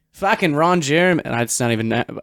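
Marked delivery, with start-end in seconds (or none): 0.2-1.2 put-on Boston accent, pitched up. Teasing the listener about how he once said a name: imitating Zach's Boston accent. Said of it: "It might have been a Boston accent".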